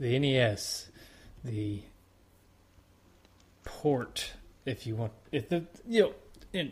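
slow, tongue-tied stumbling over the words. Talking about the NES port of a game: tongue-tied. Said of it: "I'm getting a little tongue-tied".

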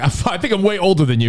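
normal talking voice

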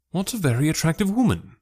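bright sudden exclamation. The narrator turns to a companion after watching a woman leave, exclaiming. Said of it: "I exclaimed".

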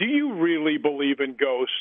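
openly snarky, condescending, talking-down tone. Retelling a snarky radio host's question: imitating a condescending tone. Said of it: "very condescending".

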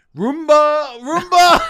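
yelling, called out loudly as if across rooms. Telling a funny story about searching the house for something lost, re-enacting own yelling, imitating own yelling. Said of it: "I was yelling".

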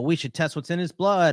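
put-on sarcastic voice. Retelling an earlier remark about a player coming back: imitating own sarcastic remark. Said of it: "I was doing the whole sarcastic".

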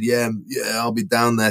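put-on, imitated, strong Brazilian accent. Retelling a phone call with drummer Felipe, in Felipe's strong Brazilian accent. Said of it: "in his really kind of strong Brazilian accent".

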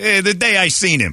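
deliberate put-on Italian accent, high and slow. Mimicking another speaker's way of saying seen: imitating a friend's Italian-sounding speech. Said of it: "It's so Italian".

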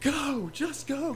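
frantic, high, shouted panic.

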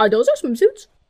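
imitated child's silly tone. Retelling how Harper asked about the swimsuits: imitating Harper's goofy tone. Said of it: "She's like, like she goes".

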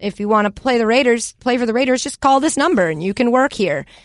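ordinary delivery

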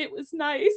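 soft, hushed, low-key quiet voice. Retelling how Zuko answers Iroh after slamming the door: quietly, imitating Zuko. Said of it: "he just kinda quietly is like".

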